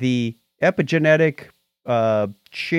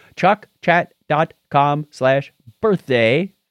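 said slowly and deliberately. Podcast host reading out a web address for listeners, said slowly. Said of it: "I have to say it slow".

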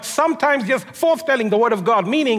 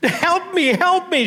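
play-acted weeping, high, tearful and desperate; 7 semitones higher than usual. Retelling a widow begging the prophet for help: acting out a crying widow's plea. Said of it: "She's crying".

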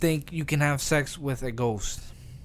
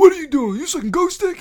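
shrieking, booming, very high, very loud yelling outburst; 10 dB louder than usual. Retelling a Vine where someone pretends to be an uncle scolding a cougher: imitating an uncle from a Vine. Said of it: "He was pretending to be somebody's uncle".

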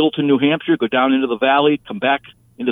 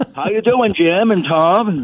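put-on Maine accent, much higher pitch; 6 semitones higher than usual. Showing how people around Bangor talk, northern Maine accent. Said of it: "they talk like this".

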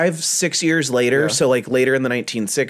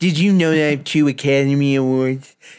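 put-on actress-style voice, talking out of side of mouth. Joking in conversation about Bette Davis, speak as Bette Davis after a stroke, side-of-mouth. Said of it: "talking on the side of your mouth like Betty Davis after the stroke".

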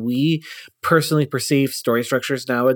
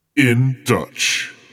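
said like an action movie title; 2 semitones lower than usual. Announcing a cartoon's title to the others, said like an action movie title. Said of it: "I said it like it was, like, an action movie title".

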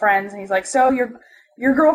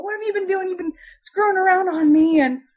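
high-pitched, accusing screaming fit; 8 semitones higher than usual. Telling a story, the speaker acts out a friend screaming at a girl: imitating someone screaming. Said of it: "screaming at this girl".

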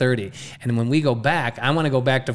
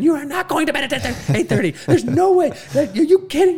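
put-on scream, higher, louder, slower; 4 dB louder than usual. A speaker recounts their wife's reaction to an early bedtime, retelling her screaming. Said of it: "she starts screaming".

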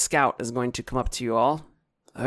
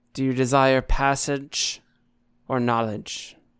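loud booming voice. A game master voices a woman on a throne questioning the party, in a booming voice. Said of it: "And a booming voice".

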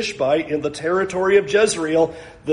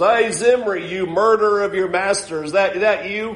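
put-on spitting-out voice; 3 semitones higher than usual. Retelling what she said to Jehu, retelling a spat-out line. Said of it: "what a great line that she spits out".

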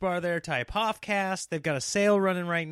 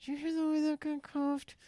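high-pitched, squeezed through clenched teeth; 11 semitones higher, 6 dB quieter than usual. Retelling what Sarah said on a flight, imitating Sarah talking through teeth. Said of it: "She's like talking through her teeth".

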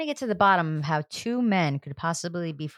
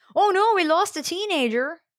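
put-on Minnesota accent, very high pitch; 13 semitones higher, 4 dB louder than usual. Reacting to a recap of a teen show: Minnesotan accent. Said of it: "what accent is that?".

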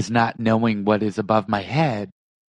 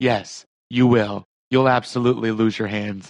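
deadpan, flat delivery. Retelling a cast member's serious answer before launch: imitating a deadpan reply. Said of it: "this deadpan approach".

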